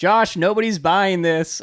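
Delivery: loud, high yell, projected across a distance. Retelling how mom answered a possible injury from inside: imitating mom yelling. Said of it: "my mom yelled out the window".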